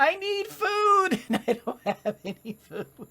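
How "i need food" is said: high, slow, drawn-out pleading voice. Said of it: "Everybody's saying".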